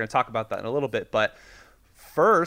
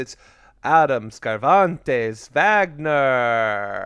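Transylvanian accent, one word drawn out; 4 dB louder than usual. Introducing the co-host to the audience, in a Transylvanian accent. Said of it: "I said Wagner in a Transylvanian accent".

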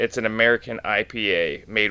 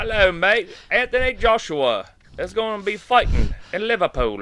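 very high-pitched faux British accent; 11 semitones higher than usual. Announcing an upcoming boxing fight: british accent. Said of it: "let me do my British accent to say".

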